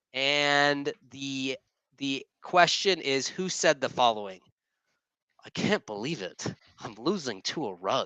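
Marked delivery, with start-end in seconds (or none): 5.5-8.1 hushed cartoon character voice. Giving a quote aloud for others to guess who said it, Disney character impression. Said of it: "do the best Disney character impression I can do".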